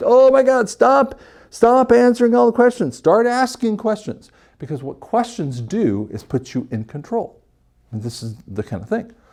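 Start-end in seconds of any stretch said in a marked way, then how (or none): 0.0-4.3 shrill, very high screaming voice. Retelling how the sales manager reacts: imitating a screaming sales manager. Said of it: "The sales manager's over there screaming".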